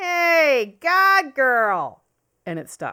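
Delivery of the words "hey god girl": put-on loud, high Chicago accent, long drawn-out hey. Telling how a nickname stuck, the speaker imitates Bill calling from the back of the bar. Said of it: "comes this classic Chicago accent".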